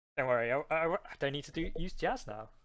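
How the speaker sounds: plain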